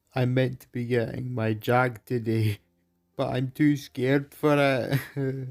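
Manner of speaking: sobbing through the words, tearful crying voice. Explaining fear of getting a jab, crying. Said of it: "Why are you crying?".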